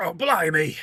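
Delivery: put-on Irish accent, too British. Friends try out accents; this attempt comes out too British: bad Irish accent attempt. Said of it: "It's too British".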